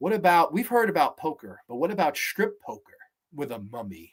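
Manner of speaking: hyped, excited delivery, as if selling something big. Imagining someone pitching a strip poker mummy story: imitating Rod Serling pitching. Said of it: "I could just see Rod Serling trying to pitch this".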